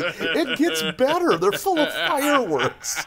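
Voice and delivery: mock giddy, very high-pitched, excited gushing burst. Retelling a cartoon scene about fireworks, imitating excited Milhouse. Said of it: "And then Milhouse excitedly".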